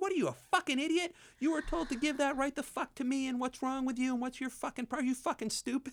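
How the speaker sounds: furious yelling, pitched way up. Retelling how a director came up and swore at him, retelling a yell. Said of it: "Are you yelling at me?".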